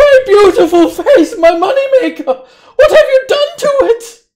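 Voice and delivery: shrill, very high, loud scream of pain. Game master voicing a man just slashed across the face, screaming. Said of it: "and he screams".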